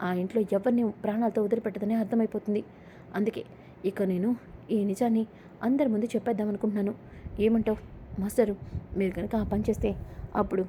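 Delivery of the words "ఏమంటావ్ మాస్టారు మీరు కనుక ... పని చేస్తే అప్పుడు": plain reading voice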